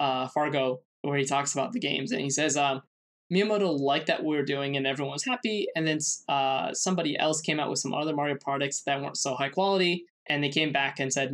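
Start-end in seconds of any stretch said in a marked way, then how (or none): none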